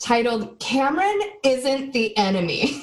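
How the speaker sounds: over-the-top, theatrical, dramatic reading aloud. Podcast host reads a listener's review aloud, dramatic reading. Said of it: "I'm gonna do a dramatic reading of this".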